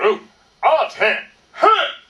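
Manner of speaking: very loud, very slow, stretched booming drill call. Leading a group, showing the call he will use; loud Marine Corps voice. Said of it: "In a loud Marine Corps voice".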